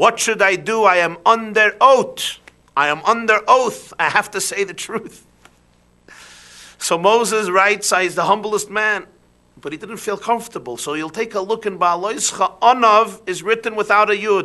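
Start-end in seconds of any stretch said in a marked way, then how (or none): 0.0-5.3 put-on Russian-accented speech. You tell listeners you are quoting the Lubavitcher Rebbe, then speak in the Lubavitcher Rebbe's Russian accent. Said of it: "in a Russian accent".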